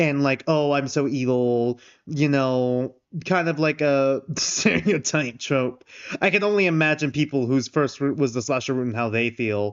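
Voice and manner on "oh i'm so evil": very slow, low, sultry, evil villain drawl. Speaker describing a character's evil voice in a game: imitating sultry evil voice. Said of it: "he does like the evil like voice".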